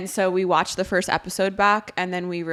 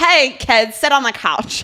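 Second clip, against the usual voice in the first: raspy, pitched-up smoker voice; 6 semitones higher, 7 dB louder than usual. A podcast host slips back into her old character voice: raspy Rita voice. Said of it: "She sounds like she has a raspy smoking voice".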